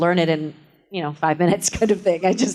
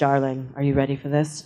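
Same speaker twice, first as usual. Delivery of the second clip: deep, gorgeous voice; 3 semitones lower than usual. Recalling a co-star entering the dressing room before The Graduate, the speaker quotes Kathleen Turner's deep, gorgeous voice. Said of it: "in her deep, gorgeous voice".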